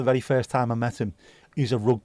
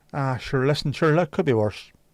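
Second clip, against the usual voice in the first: put-on Northern Irish accent; 3 semitones higher than usual. Reacting to someone's story in conversation, in a Northern Irish accent. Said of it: "doing that with a Northern Irish accent".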